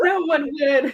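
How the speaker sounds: high, tearful laugh-cry.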